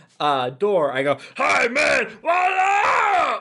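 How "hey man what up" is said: put-on wild puppet voice, higher. Voicing a hairy puppet creature greeting at every door: Animal from the Muppets voice. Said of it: "I'm being the animal in this instance".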